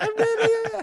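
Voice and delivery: tiny, very high, squeaky little voice. Joking about a missing friend's tiny voice from headphones: little squeaky voice imitating Brad. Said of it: "A little squeaky voice going".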